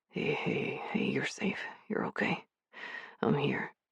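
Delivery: drowsy, rough, hoarse, very hushed whisper. Declan, holding the narrator close, reassures them; hoarse, sleepy whisper. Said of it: "He whispered in a hoarse, sleepy voice".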